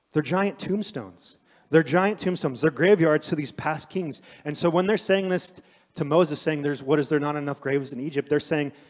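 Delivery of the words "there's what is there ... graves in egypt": plain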